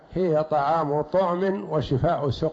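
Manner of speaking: ordinary talk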